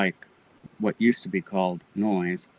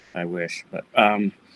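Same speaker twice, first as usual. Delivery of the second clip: ordinary delivery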